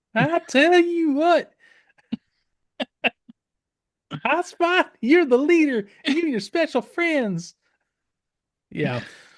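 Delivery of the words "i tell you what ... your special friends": put-on very high-pitched Florida accent. Reading Optimus's lines to the team leader, in a Dusty Hayes voice. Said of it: "You're reading Optimus's lines like Dusty Hayes now".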